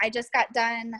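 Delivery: ordinary talk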